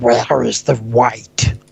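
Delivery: gurgly, bubbling voice. Voicing an unseen creature asking a question: gurgling voice. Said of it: "a gurgling voice repeats".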